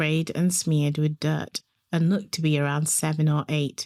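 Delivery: plain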